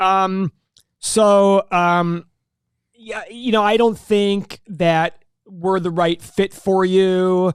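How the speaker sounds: very slow, halting stammer with fillers. Retelling letting a woman go in his office, acting out his stuttering. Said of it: "And I'm stuttering".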